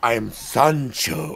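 put-on soft, breathy, sultry accent. Describing a character's entrance, imitating him saying his name: Sancho's sexy accented voice. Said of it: "amazingly sexy voice with the accent".

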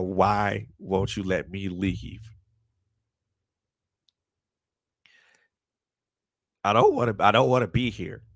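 crying, pleading voice. Man recounting lying on the floor, asking god why he can't leave: retelling a tearful plea. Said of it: "just crying my eyes out and asking God".

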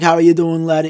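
put-on Irish accent. Retelling meeting a man sitting on his steps, quoting him in an Irish accent. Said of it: "because he's Irish".

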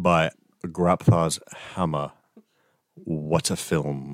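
very slow, drawn-out delivery, every word stretched. Quoting a film line, then naming it: Alan Rickman impression. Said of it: "That was my Alan Rickman impression".

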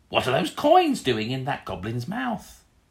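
loud, swooping goblin creature voice. Game master voices goblins questioning the player about coins; goblin voice. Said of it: "the goblins look at you and they go".

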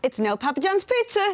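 put-on high-pitched, loud young boy voice. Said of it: "I think he'd say".

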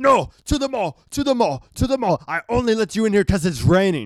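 put-on high, insistent guard-voice yelling. Retelling a security guard at the theater entrance: imitating a guard yelling. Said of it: "the security guard here yelling".

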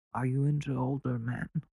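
put-on low-key, quiet, halting, with slight Italian accent. Imagining Andrew Cuomo asking a young woman who works for him, Andrew Cuomo impression. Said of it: "the Andrew Cuomo impression is just Christopher Walken".

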